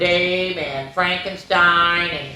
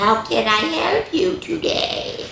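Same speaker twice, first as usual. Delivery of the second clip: slow squeak rising to very high pitch; 10 semitones higher than usual. Reading a story aloud, the librarian greets a newcomer, Miss Creeper's high squeaky voice. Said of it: "in a high-pitched, squeaky voice".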